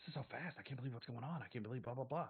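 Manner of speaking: hushed, whispering voice. Voicing a character stunned by how fast things move: whispering. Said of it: "she starts whispering".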